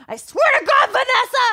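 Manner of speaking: very high, slow, drawn-out furious scream through gritted teeth. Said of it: "the gritted teeth mom scream".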